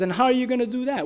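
put-on laughing taunt. Retelling the giant's reply to David: imitating a laughing taunt. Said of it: "Goliath laughs at him and says".

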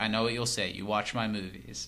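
ordinary talk

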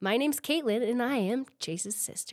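text-to-speech announcer voice. Introducing herself as Chase's sister, sounding like the TikTok voice. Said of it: "You sounded like the TikTok voice for a second".

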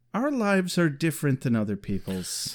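said dead straight, flat and low. Recapping a scene, quoting Oz's reply to Willow, retelling Oz's deadpan line. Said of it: "Oz perfectly deadpans".

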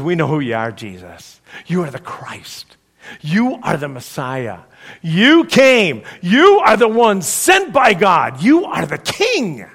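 mock forceful, loud, powerful, sweeping, rising delivery. Retelling a disciple's answer to his teacher, in a powerful voice. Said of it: "in this powerful voice".

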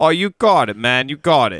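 terrible New York accent. Showing on request an old stage accent: terrible new york accent. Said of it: "I had a pretty terrible New York accent".

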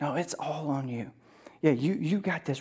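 soft, hushed, tempting whisper.

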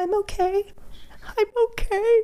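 sobbing in a very high, slow voice. Speaker recalls being on the floor, imitating past self crying. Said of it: "on the floor crying going".

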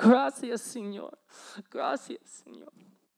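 high, bawling, sobbing out the words. Retelling the dad being given the keys: imitating Juan bawling. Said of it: "he just bends over like this and is just bawling".

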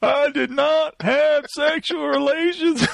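slow, croaky, drawn-out Southern drawl. Quoting a famous denial: Bill Clinton impression. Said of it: "I inadvertently did a Clinton impression".

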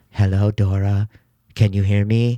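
put-on low, slow, slightly warped creepy old-woman voice. Describing a voice that keeps talking to a girl hiding in a shed: creepy manipulated old-woman voice. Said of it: "almost like an old woman's voice, but like a little manipulated".

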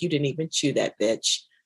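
snide, judgmental put-on dog voice. Voicing the dog watching someone eat supper: put-on judgy dog voice. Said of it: "She's all judgy".

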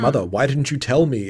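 ordinary talk, nothing marked

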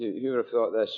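ordinary delivery

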